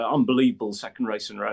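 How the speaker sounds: mock exasperated, fed-up frustrated outburst. Retelling a driver's complaint after a pit stop: imitating George's frustrated voice. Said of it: "you could hear the frustration in his voice".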